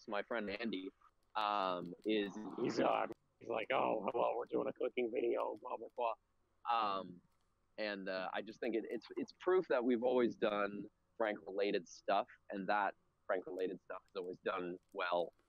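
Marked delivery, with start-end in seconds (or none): 3.7-7.0 put-on voice, creaky and rough. Retelling a prank video with a friend: imitating Andy's prank voice. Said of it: "my friend is doing a prank voice".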